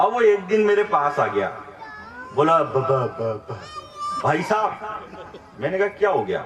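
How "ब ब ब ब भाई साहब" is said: low, stuttering repeats of the b sound. Retelling what a neighbour boy said when he came over, imitating a stutter. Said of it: "वो लड़का थोड़ा अटक अटक के बोलता है".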